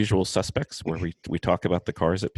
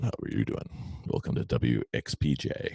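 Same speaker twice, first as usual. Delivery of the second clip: slow, drawn-out on-air radio DJ voice; 5 semitones lower, 5 dB quieter than usual. Getting ready to start, the speaker puts on a radio voice. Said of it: "Got to get my radio voice on".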